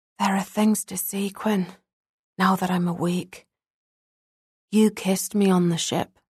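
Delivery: hushed, half-whispered voice. Shinobu, now awake, speaking to Quinn, half-whispered. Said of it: "He whispered".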